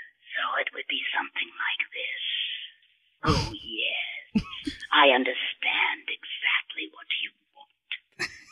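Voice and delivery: airy, breath-heavy aspirate voice, very drawn out. Demonstrating an aspirate vocal quality for a listener; aspirate breathy voice. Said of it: "barely letting that air touch over your vocal folds".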